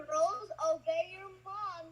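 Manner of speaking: voice pitched very high. Doing an impression of Doug on request: impression of Doug. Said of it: "a vocal impression of Doug".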